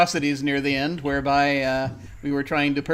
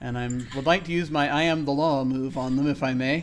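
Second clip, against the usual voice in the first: ordinary talk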